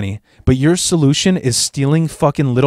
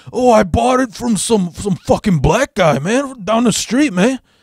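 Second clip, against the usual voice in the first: put-on higher Mexican accent; 7 semitones higher than usual. Retelling an older man's excuse about where he bought it: Cheech-style Mexican accent. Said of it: "he had like that typical Cheech Mexican accent".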